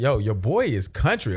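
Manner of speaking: normal talking voice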